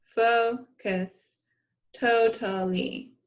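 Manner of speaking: slow, robotic voice. Teacher practicing a word list with the class, slow robot talk. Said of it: "So you want to say it slow".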